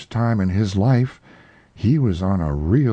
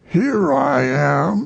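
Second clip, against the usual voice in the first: growly, rough voice, a bit high; 7 semitones higher than usual. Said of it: "said a growly voice behind him".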